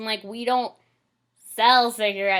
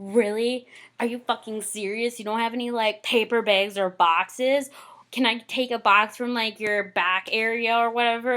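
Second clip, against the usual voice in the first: put-on angry complaining rant, quieter; 5 dB quieter than usual. Retelling a customer complaining about bags: imitating an angry complaining customer. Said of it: "This guy was bitching at me".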